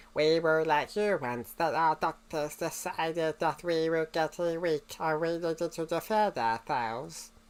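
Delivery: slow, deliberate cyborg voice. Redoing the Cyberman voice to show it is unmodified: Mondasian Cyberman voice. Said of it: "I made that voice with just".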